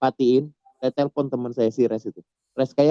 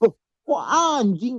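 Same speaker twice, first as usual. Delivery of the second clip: mock very high-pitched, indignant, heated angry tone; 9 semitones higher than usual. Speaker retells how the other person snapped back after being sworn at: imitating an angry retort. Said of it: "Marah dia. ... ngegas, beneran berarti".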